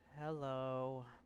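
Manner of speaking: sleepy, slurred, with a drawn-out ending. A girl lying on a rooftop greets the narrator as he walks over; drowsy slurred hello. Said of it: "stretching the end of the word with a slurred voice".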